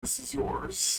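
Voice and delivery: whispered aside, as quiet as possible. Speaker acts out what another man says as he walks in: muttered under his breath. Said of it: "kind of under his breath, quietly as he can".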